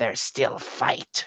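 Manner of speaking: whispered, horribly broken monster speech. Game master voices a dagger-wielding creature in a horribly broken Corvite tongue. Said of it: "in this horribly broken uh, uh, Corvite tongue goes".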